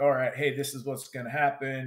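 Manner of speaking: whispered delivery. Retelling strategizing with the other American at dawn: retelling a whisper. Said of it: "just whispering".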